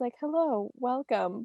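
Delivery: polished, formal, professional podcast-host voice, all business. Speaking with a longtime friend about how they both sound, in a formal professional voice. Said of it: "hearing both of our professional voices".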